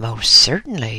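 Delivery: ordinary delivery, nothing marked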